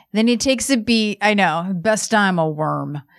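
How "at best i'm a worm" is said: put-on gritted-teeth delivery, lower and slower. Retelling what he said after taking a beat, through gritted teeth. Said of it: "he's like just saying this through gritted teeth".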